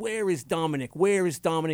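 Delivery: blustering, wannabe tough-guy Italian-American voice. Retelling a wannabe tough guy italian demanding someone: imitating a wannabe tough guy italian. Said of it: "wannabe tough guy Italian from East Haven".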